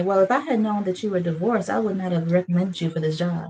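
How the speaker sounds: ordinary talk, nothing marked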